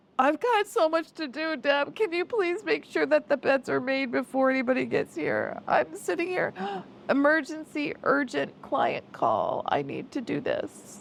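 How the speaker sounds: small, high, swooping whiny voice. Mimicking the listener asking deb to make the beds, mock little whiny voice. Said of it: "use that little whiny voice".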